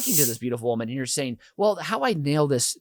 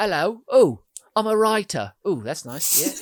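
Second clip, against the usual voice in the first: fake British accent, higher pitch; 5 semitones higher, 4 dB louder than usual. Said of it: "be Theo Loddington for the whole weekend".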